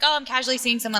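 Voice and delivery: normal talking voice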